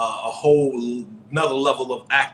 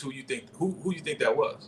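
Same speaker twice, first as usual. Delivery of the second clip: ordinary talk, nothing marked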